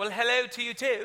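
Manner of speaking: put-on British accent. Retelling his reply to a British woman: put-on British accent. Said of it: "you wanna talk like them".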